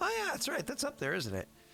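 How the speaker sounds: high-pitched, mock offhand tone. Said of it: "passing conversation of".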